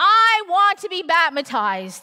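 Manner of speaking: loud, high-pitched scream. Retelling being in the baptism tank while Grace screams from below: imitating Grace screaming. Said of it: "Grace down here screaming at me".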